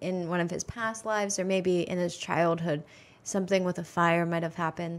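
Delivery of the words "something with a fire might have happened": ordinary talk, nothing marked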